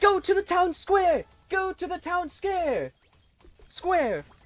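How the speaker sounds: excited crowd shouting. Voicing townsfolk calling to the party: excited yelling townsfolk. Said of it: "excitedly yell".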